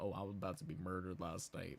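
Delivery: sneering, mocking send-up voice. Mocking a contestant with main character syndrome: mocking Omer. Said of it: "talking about some".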